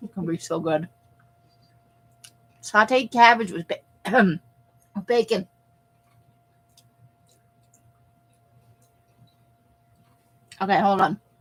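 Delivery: talking while chewing, mouth full. Just handed the cabbage, the speaker talks while chewing. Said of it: "I'm chewing".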